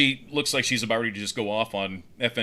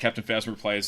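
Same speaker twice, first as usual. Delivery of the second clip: ordinary delivery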